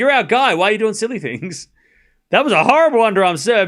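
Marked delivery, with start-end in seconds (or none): 0.0-1.7 bewildered, confused, puzzled crowd voices. Retelling how the crowd reacted to a bad serve: imitating the confused crowd. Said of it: "The crowd were kinda confused 'cause they're like".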